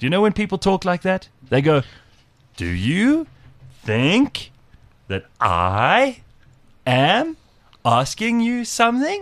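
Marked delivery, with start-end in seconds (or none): 2.6-9.2 rising uptalk tune on "something". Imitating people whose every sentence sounds like a question, pitch rise on something. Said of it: "everything she says sounds to me like a question".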